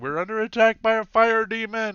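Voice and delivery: shrill, panicked scream at full volume. Voicing gnome guards who spot a fire demon: gnome guards screaming. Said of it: "what you're hearing is them screaming".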